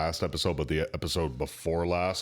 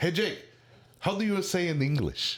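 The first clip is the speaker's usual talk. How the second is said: put-on Russian accent, pitched very high; 11 semitones higher than usual. Retelling what a coworker asks him: imitating a coworker, Russian accent. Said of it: "say that with a Russian accent".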